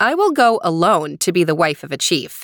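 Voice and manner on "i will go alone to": ordinary delivery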